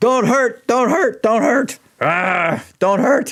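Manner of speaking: very high, shrill, loud, panicky, frantic troll voice. Voicing a troll who thinks he was poked for attention; agitated troll voice. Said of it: "he's still very very agitated".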